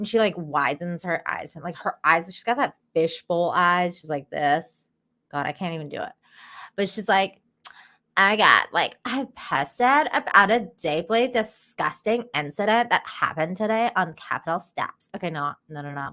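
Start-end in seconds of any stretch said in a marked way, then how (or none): 8.2-15.1 put-on overdone, heavily laid-on Valley Girl accent. Imitating how a woman you're describing talks, in a Valley Girl accent. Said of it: "in like the Valley Girl accent".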